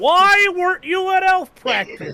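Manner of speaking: shrill, very high, very loud, funny comic delivery. Repeating a movie line after another speaker: louder and funnier line reading. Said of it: "I figured you would say it louder and funnier".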